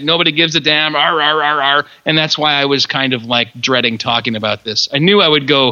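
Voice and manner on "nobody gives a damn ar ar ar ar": put-on grumbling, curmudgeonly old man voice. Complaining that the world has gone bonkers: grumbling old man voice. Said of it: "now I sound like this old man".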